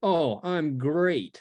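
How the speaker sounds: cheerful-sounding words, sarcastic tone meaning the opposite. Showing how sarcasm sounds, answering how are you: sarcastic demo. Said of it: "Sarcasm's just like that".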